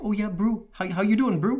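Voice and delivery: put-on, very high, thick New Zealand accent. Describing how local New Zealanders usually talk, the speaker does a thick Maori accent. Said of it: "they usually have these thick accents and like".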